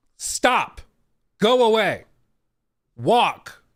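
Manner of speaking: stern, loud, firm, very slow, widely spaced words. Retelling the tour guide ordering the man away: imitating a firm, high-intensity command. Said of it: "very clear and high intensity".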